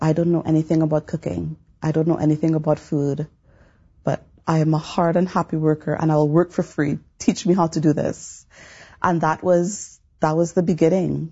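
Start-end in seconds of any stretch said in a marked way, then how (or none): none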